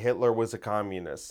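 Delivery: ordinary talk, nothing marked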